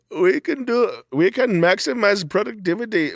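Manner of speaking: put-on Indian accent. Acting out what a guy behind dream advertising might say: imitating an Indian guy. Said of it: "an Indian guy is like".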